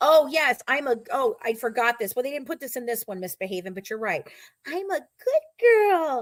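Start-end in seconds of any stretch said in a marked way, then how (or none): 4.7-6.2 put-on very high, very slow, drawn-out little-girl baby voice. Act out what she says, in her little baby voice. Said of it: "in her little baby voice".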